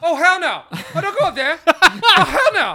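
shrill, booming, very high, loud, drawn-out scream. Playing the moviegoer who yells at horror film characters, acting out screaming at the screen. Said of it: "screaming at the screen".

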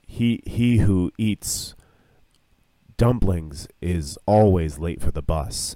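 low, mysterious, enigmatic oracle-like delivery. Making up a saying to go with some dumplings: mysterious voice. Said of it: "let's sound mysterious with it".

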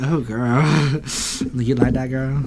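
sleazy, creepy, leering voice. Telling a story, the speaker quotes their own remark: mock creepy voice. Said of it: "that sounded so creepy".

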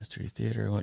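speaking in a whisper. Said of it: "now I'm whispering the comments".

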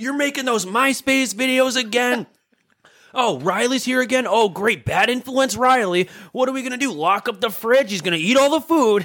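very high, shrill screaming rant. Retelling how his dad interrupted their videos, imitating dad screaming. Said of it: "just start screaming".

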